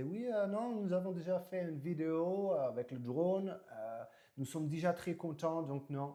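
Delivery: slow, high-pitched, poorly imitated Dutch accent. Quoting what a Dutch man said: bad Dutch-English accent. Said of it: "il avait un accent un peu, euh, un peu anglais et tout, parce que c'est un néerlandais".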